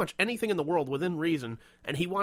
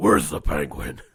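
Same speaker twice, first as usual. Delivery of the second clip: booming, very deep, loud, stuffed-up, congested voice; 13 semitones lower, 9 dB louder than usual. Coaching a kid who wants to be Batman, doing the Batman voice, like a cold. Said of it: "Sound like you have a cold".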